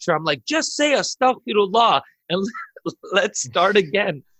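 laughing through the words. Speaker retelling giving a crowd a little lecture, laughing while speaking. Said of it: "I'm laughing because there's a crowd now".

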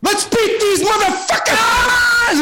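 put-on Japanese accent, drawn out, slow, pitched very high. Retelling how Ichiro stood up after the manager's speech, do an Ichiro impression in a Japanese accent. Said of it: "in his Japanese accent".

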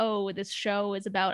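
ordinary delivery

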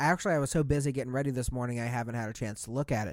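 fast, low, rushed, rattled-off, offhand tone. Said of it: "He's like".

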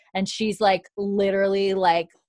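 plain

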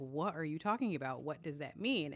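usual speaking voice

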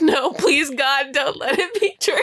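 acted near-tearful pleading. Retelling reacting to seeing the pit, retelling a near-tearful plea. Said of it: "I literally wanted to cry".

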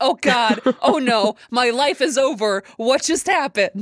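held-down, high, mild scream of alarm. Speaker retells watching a movie on the couch: retelling own screaming. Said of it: "I'm sitting here screaming on my couch".

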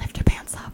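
put-on whisper. Speaker quotes what their partner said after they rolled down, retelling a whisper. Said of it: "And she like whispered it".

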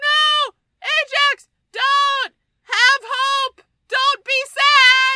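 very high, very loud, slow, drawn-out howling scream. Retelling a movie scene where a boy's horse sinks: imitating a boy screaming. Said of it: "And he's screaming".

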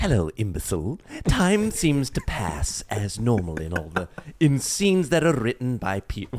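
sing-song, swooping cartoon voice, wide pitch swings. Answering a request to speak as Stewie Griffin: Stewie Griffin voice. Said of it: "could you help me out as Stewie Griffin?".

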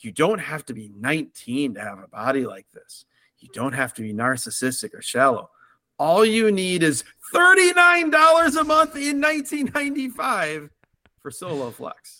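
breathy, very suggestive commercial announcer voice. Describing a commercial, the speaker quotes it in a Soloflex commercial breathy voice. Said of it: "this very suggestive, breathy voice saying".

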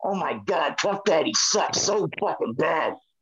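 grumbled aside, muttered half to himself. Retelling what a boss said while watching a match: imitating someone muttering under breath. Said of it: "says underneath his breath".

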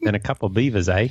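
put-on accent, sounding Australian. Joking with co-hosts about a Canadian news story, in a put-on Australian-sounding accent. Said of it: "that's Australian".

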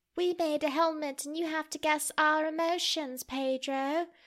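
put-on little kid's British accent. Retelling what they asked pedro next, in a child british accent. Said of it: "Your child British accent is so good".

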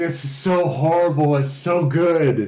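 mock excited yelling. Recalling a fall, the speaker acts out yelling at his wife: retelling a yell. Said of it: "yelling at my wife".

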